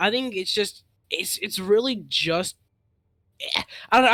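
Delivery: stuttering, stammering speech. Discussing how two teams are playing, losing the thread: stuttering. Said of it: "I'm like stuttering".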